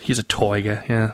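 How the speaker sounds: soft, barely audible, accidental Australian accent. Answering a podcast question, the speaker slips into an Australian accent. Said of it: "I think I just went Australian there".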